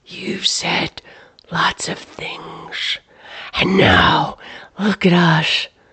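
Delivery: slow, disembodied whispered voice. Narrator voicing a disembodied voice answering Clyde in a dark barn; disembodied whisper. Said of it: "A disembodied voice swooped forward from out of the inky void, pressing Clyde back against the wall of the barn. It came from all directions, and yet it was only a whisper. / [name]? / and yet it was".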